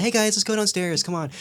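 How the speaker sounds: friendly mom voice. Speaker retells how a mother spoke to her kids, in a put-on nice mom voice. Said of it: "she puts on her like nice mom voice".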